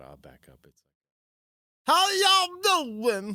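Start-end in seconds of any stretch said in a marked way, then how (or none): 2.0-3.3 very high, loud holler with tongue-out sound. Imitating a man who always had dip in his mouth: loud imitation of a man with dip. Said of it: "it's really loud".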